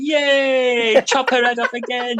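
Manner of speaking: mock gleeful crowd cheer, very high-pitched, slow and drawn out. Imagining onlookers at a beheading, going: imitating someone cheering.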